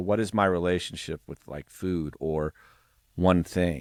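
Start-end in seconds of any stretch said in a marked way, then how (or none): none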